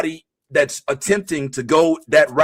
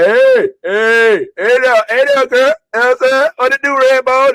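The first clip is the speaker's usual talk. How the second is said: loud, high-pitched catcalling holler; 8 semitones higher, 6 dB louder than usual. Acting out a construction worker calling to a woman walking by: imitating a catcalling construction worker. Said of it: "a construction worker who sees her walk by in her boots and is like".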